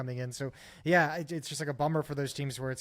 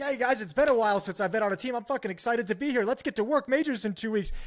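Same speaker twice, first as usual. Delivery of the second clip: high, jacked-up, put-on fired-up eagerness; 8 semitones higher, 4 dB louder than usual. Acting out an imagined pro player arriving at a new team office: excited Hooksy impression. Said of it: "all jacked up".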